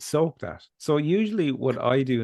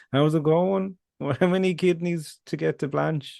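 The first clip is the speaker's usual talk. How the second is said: slow, high, drawn-out put-on Dublin accent; 6 semitones higher than usual. Joking about taxi fares costing kidneys: put-on dublin accent. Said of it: "we're doing Dove accent again".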